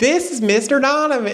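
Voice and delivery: bad Southern accent, pitched very high. Retelling a woman introducing him to kindergartners, speaker uses a bad Southern accent. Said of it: "My Southern accent".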